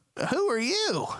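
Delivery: very high, little pixie voice, pitched way up.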